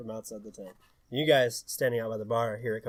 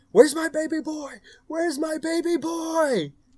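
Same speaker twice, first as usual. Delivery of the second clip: put-on shrill, very high frantic scream, "boy" drawn out; 8 dB louder than usual. Narrating a game, a man flings open tents searching for his baby boy, frantic screaming.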